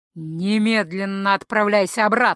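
growling. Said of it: "прорычал Эйнард".

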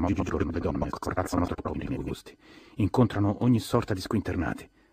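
plain reading voice

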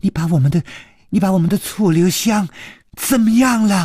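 trembling, quavering voice, rising high pitch. A narrator voicing a character questioning a captured foe, in a trembling voice. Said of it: "颤声说".

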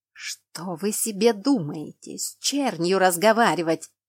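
hissed, scolding tone. A narrator reads a woman turning on the narrator, hissed. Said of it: "прошипела".

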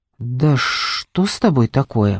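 low, slow hissed voice. The narrator answers a ghost who drifted in through the ceiling: hissing. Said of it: "Прошипела я".

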